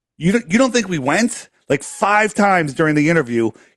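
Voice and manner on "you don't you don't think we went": play-acted, high, stunned, incredulous disbelief. Retelling an astronaut's reaction in a debate: imitating a shocked astronaut. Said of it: "he was shocked by the exact same thing".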